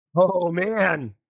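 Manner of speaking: speaking through laughter. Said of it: "I'm sorry for laughing".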